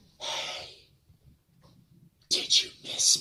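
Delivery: skin-crawling, evil, hushed whisper. Retelling the voice he heard speaking to him, in a very evil voice. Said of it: "very evil voice that would make your skin crawl".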